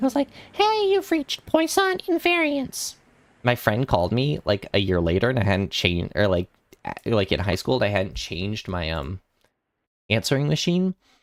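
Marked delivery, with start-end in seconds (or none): 0.5-2.9 put-on young voice, much higher, slower. Recreating his seventh-grade answering machine greeting, imitating his high young voice. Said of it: "It's just a high low voice".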